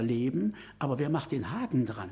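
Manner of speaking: ordinary talk, nothing marked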